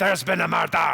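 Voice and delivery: loud put-on Scottish accent. Addressing Scottish audience members, giving the best phrase in a Scottish accent. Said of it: "the Scottish accent".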